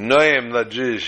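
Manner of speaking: put-on Israeli-accented speech. Telling a story, voicing a man's reply to a Chabad boy in an Israeli accent. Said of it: "with his nice Israeli accent".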